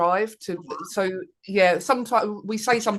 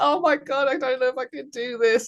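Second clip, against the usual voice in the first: put-on scream, higher pitch; 6 semitones higher than usual. Retelling being out the back at competitions, imitating a scream.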